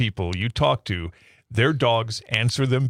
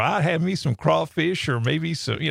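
put-on Southern American accent; 5 semitones higher than usual. Imitating a daughter answering a dinner question: Reagan's Southern accent. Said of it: "She answers in a southern accent".

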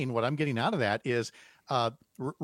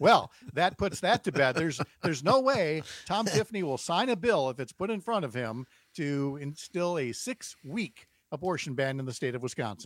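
heavily sarcastic, dripping with sarcasm. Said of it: "that's sarcasm".

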